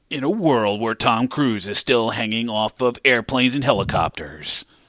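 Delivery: epic, dramatic movie trailer narrator voice-over. Pitching a mock movie trailer, speaking its narration: movie trailer voice-over. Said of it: "You hear his voice over the video imagery".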